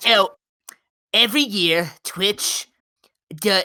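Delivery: put-on nerdy character voice. Starting an explanation about twitch, the speaker puts on a nerd voice. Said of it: "this is my nerd voice".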